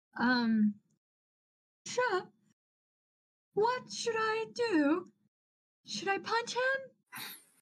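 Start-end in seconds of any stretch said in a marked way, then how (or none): 1.9-7.2 very high, in-character shouted yell. Yelling to Shep in character during a fight: yelling in character. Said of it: "first I'm going to yell at Shep".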